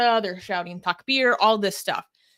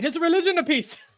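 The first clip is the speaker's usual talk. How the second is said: put-on mocking voice with raised pitch; 8 semitones higher than usual. Parodying a claim, doing the Apostate Prophet and David Wood voice. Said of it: "I'm trying to do the the voice that him and David Wood do together".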